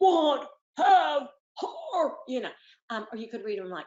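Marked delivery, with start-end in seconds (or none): 0.0-2.1 big bear character voice. Showing how to read sight words in a voice: Papa Bear voice. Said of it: "read 'em like Papa Bear".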